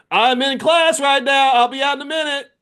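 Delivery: very loud, very high, exasperated frustrated yell. Mid-class, calling out to someone knocking on the door, frustrated dad voice. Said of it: "frustrated dad voice has to leave the room".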